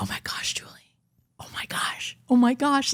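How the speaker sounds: almost whispered, bubbling with excitement. Retelling how he sounded in her head, imitating an excited near-whisper. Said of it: "Like almost whispering".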